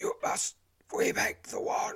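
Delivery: gasping. Collapsed Zazuin speaks to you with his last breaths, gasped. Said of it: "he gasped".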